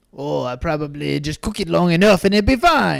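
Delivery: put-on French accent of a chef. Imagining what the chef was thinking, spoken in a French chef accent. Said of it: "This is my French chef accent".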